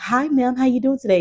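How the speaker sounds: loud, showy, high-pitched delivery. Retelling how a woman greeted another lady: imitating a loud greeting. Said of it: "really loudly is, like, greeting the lady".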